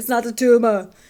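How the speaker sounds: loud, deliberately bad put-on Austrian accent. An aside while describing a performance, an Arnold Schwarzenegger impression. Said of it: "that's my really bad um, impression. Arnold Schwarzenegger".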